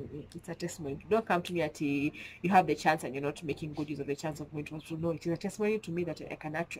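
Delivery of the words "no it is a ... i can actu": rapid, rattled-off speech. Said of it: "I'm talking fast".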